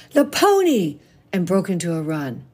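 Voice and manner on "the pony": very high, loud, excited shout. A girl drops her snowball at the sight of the horse trailer, yelling.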